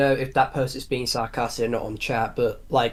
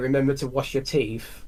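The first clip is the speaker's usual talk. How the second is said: ordinary talk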